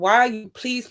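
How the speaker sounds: imitated, put-on begging, pleading voice. Retelling being driven to the block, retelling her own begging. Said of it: "I'm begging him, I'm begging him".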